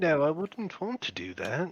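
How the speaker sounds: put-on voice like a young child. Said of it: "He shakes his head and he goes".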